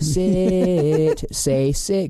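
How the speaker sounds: sing-songy voice. Retelling coaxing a toddler to say a word: imitating own sing-songy voice. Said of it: "in a sing-songy voice".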